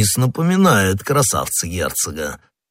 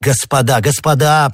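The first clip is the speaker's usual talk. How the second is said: voice pitched higher; 6 semitones higher, 3 dB louder than usual. A man cuts into his companions' joking, interrupting. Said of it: "прервал их Д'Артаньян".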